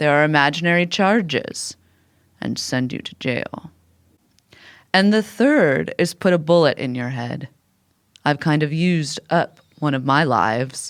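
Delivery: ordinary delivery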